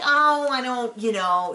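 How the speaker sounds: put-on very slow, evasive, hedging delivery. Retelling a scene where someone is asked a question, imitating someone dodging a question. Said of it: "she's kind of trying to dodge the question".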